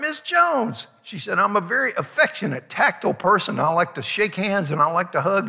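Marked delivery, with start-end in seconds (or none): 0.0-0.9 very high, screamed-out call. Retelling spotting a former high school teacher in a crowd, retelling a scream. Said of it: "I screamed out".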